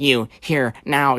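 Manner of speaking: imitated nasally voice. Retelling what an 18-year-old said on her second day, imitating a nasally voice. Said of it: "the most nasally voice in the world".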